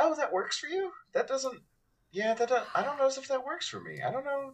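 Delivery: high, curious, gently surprised, non-judgmental tone. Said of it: "not in a way of judgment, just of like".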